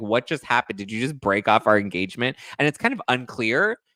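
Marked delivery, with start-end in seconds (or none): none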